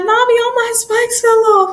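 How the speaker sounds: put-on, high, tearful sobbing and crying. Retelling telling mom after a race that the spikes fell off, imitating own past crying. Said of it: "And I'm crying".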